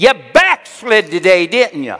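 very loud, high-pitched, fond and loving yell. Retelling a greeting on opening the door at night: imitating a loving yell. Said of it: "Phyllis yells in a loving voice".

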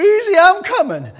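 shrill, high, loud, booming dramatic hollering cry. Asking if the listener has seen Sanford and Son, then imitating Sanford and Son. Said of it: "you ever see that movie, Sanford and Son?".

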